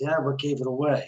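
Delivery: put-on flat, deadpan delivery. Retelling how the male actor answered the speaker, imitating a deadpan reply. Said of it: "And he's deadpan".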